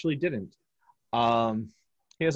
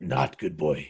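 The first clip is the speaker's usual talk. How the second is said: very low, deep, hulking minotaur beast voice; 8 semitones lower than usual. Game master voicing the minotaur to the players in a d and d game, minotaur voice. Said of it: "And the minotaur goes".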